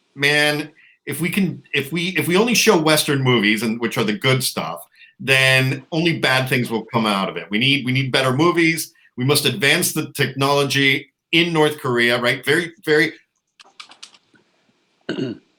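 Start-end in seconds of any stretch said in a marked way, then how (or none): none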